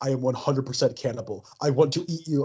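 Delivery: put-on intense, deep voice. Joking in conversation about his Instagram messages, imitating Armie Hammer's intense, deep voice. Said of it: "read those Instagram messages with like his intense, deep voice".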